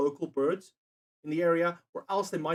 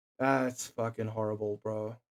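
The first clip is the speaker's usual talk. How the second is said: plain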